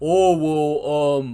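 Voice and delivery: teasing, jabbing tone. Imitating the co-host's reply to hearing there are topics. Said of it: "that is my impression of you".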